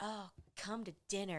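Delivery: soft, laid-on, put-on sultry voice. Recapping a show, voicing Anne inviting Thorn to dinner, Anne's mock-sultry voice. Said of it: "like this real sultry voice".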